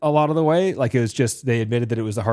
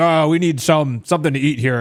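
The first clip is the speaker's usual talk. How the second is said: casual, lightly played big brute orc voice; 3 semitones higher than usual. Describing the orcs at the bonfire holding the hobbits: deep booming orc voice. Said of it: "one of them's a deep booming voice".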